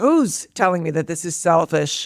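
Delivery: plain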